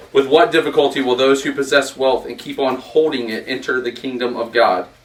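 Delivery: plain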